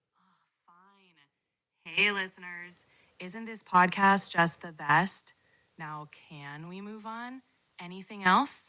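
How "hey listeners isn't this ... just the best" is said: ordinary delivery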